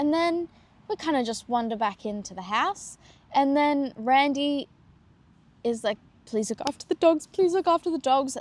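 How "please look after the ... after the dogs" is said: mock choked-up, tearful, pleading tone with repetition. Retelling a tearful plea to look after the dogs: imitating Randy tearing up. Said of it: "Starts tearing up".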